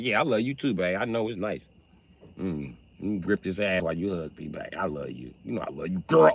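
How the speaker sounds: mocking dumb, clueless, agreeable tone. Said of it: "But you be like".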